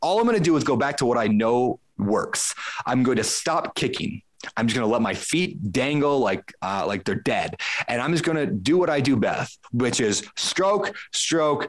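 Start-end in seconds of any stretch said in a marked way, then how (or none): none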